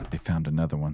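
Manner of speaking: hushed half-whisper, barely above a breath. Voicing a soldier speaking of the fracture: barely above a half-whisper. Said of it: "Barely above a whisper".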